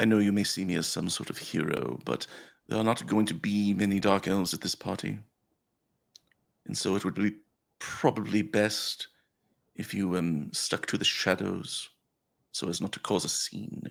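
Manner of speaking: quiet, discreet, confidential word off to one side. A character waves you over and leans in away from the group, speaking quietly. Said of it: "and quietly, like away from the rest".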